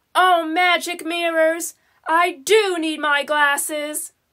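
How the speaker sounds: ordinary delivery, nothing marked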